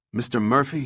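ordinary talk

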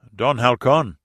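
alarm in the voice. As water pours down in a torrent, a man calls out: alarmed. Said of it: "there was alarm in [name]'s voice".

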